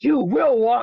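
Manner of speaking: mock stern, firm, commanding voice. Retelling what the speaker and another person both said to it: imitating a commanding voice. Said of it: "like the commanding voice".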